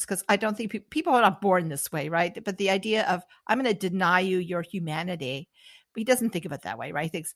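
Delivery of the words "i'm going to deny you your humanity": ordinary delivery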